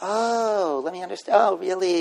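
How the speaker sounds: put-on condescending, talking-down baby talk with drawn-out "oh". Demonstrating how some people address wheelchair users, in condescending baby talk. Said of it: "like talking to them like they're in third grade".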